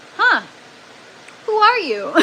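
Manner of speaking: high-pitched, loud voice in mock amazement.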